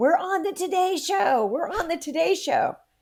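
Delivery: very high, shrill scream. Retelling a mom's phone call from a book tour: imitating mom screaming. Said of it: "she started screaming in the phone".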